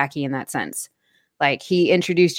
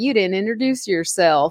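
bad country sheriff accent; 3 semitones higher than usual. Retelling what the dirty sheriff in a cyberpunk game said: worst country accent. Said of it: "he's got like the worst country accent".

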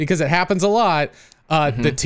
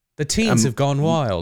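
put-on British accent; 5 semitones lower than usual. Repeating a whole sentence after announcing it, in a put-on british accent. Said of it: "Parenthetical British accent".

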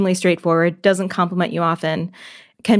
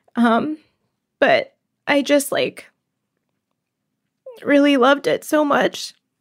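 tearful crying, said slower; 8 semitones higher than usual. Recalling one of the hardest decisions ever made, crying. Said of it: "I can't believe I'm crying about this".

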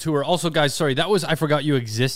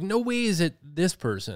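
ordinary delivery

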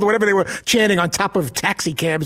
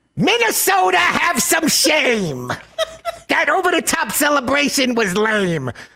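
high comedian voice with swooping, swinging pitch; 7 semitones higher than usual. Reading five short lines aloud in a Gilbert Gottfried voice. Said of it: "Should I humor you with the Gilbert Gottfried voice of it".

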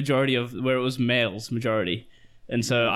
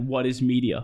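normal talking voice

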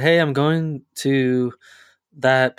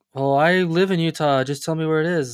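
annoyed, worked-up, mad, insistent tone; 3 semitones higher than usual. Retelling a Facebook friend's reply about a camping spot: imitating someone mad. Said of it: "she got all mad".

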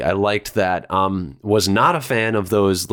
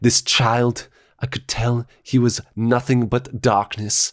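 documentary narrator voice; 3 semitones higher than usual. Quoting a documentarian's line from a cartoon episode: Werner Herzog impression. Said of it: "And he's like".

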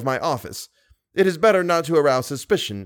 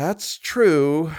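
sighed, sighing. Narrator reading a novel gives Richard's reply to Moncharmin, sighed. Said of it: "sighed Richard".

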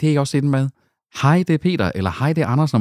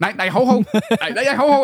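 put-on calling out, higher; 8 semitones higher than usual. Retelling calling after the driver as he walks off: imitating own past calling out. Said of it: "jeg står sådan lidt".

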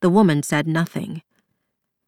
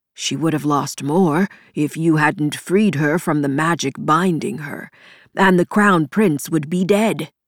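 ordinary delivery, nothing marked

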